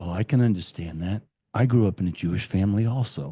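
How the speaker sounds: deep, comforting, reassuring voice. Retelling a man channeling Jesus speaking to her, deep, slow Jesus voice. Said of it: "Jesus has a deep voice and he speaks very slow".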